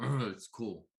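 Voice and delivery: loud, grunting giant voice. Answering the group in giant, grunting. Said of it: "I'm gonna grunt back and be like".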